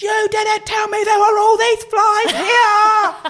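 very high, very loud, shrill screech. Retelling running down a fly-covered road, pregnant, yelling at her husband: retelling screaming. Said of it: "I was screaming, going to my husband".

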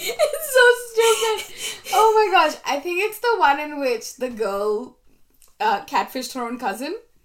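loud, high, giggling, laughing talk. Naming the story that really got them, laughing while talking. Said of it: "I'm sorry, I'm laughing".

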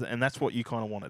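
ordinary talk

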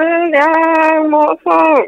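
excited shout. Urged by the interviewer to shout, the contestant calls out with an excited shout. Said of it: "Shout it out".

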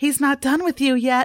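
put-on quick, small little girl's voice. Narrator voicing a small girl heard down the hall, small girl's voice. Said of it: "a small girl's voice says".

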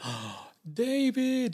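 put-on loud, very high voice with Polish accent. Retelling running into Tony again after years, Tony's Polish accent. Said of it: "in his beautiful Polish accent".

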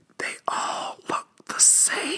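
hushed, secretive whisper. Saying something so no one else can hear it, whispered. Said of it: "I'm going to whisper this so no one else can hear it".

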